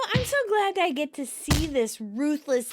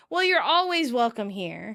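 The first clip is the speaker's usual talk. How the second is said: plain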